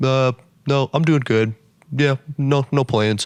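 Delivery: flat, curt, deadpan tone. Retelling a customer's answers to her many questions: imitating a flat curt reply. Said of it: "he is just nothing".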